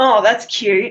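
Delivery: mocking sarcastic tone. Explaining how people use cute in a sarcastic way, demonstrating it sarcastically. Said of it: "like in a sarcastic way".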